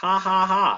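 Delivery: high, mock robotic cackle. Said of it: "she literally employs sarcasm".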